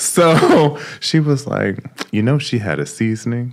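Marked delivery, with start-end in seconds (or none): 2.1-3.5 mimicked hushed low voice, quieter. Retelling what the speaker's mother said, imitating mom's low voice. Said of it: "Why are you talking to me like low in a low voice?".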